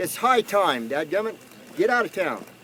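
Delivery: high, heated, fired-up rant.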